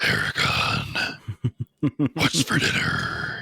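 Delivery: audiobook narrator-style dragon voice. Describing how an audiobook narrator voices the dragons: audiobook narrator's dragon voice. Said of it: "conveys all the dragons as talking a little like this".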